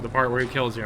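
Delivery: ordinary delivery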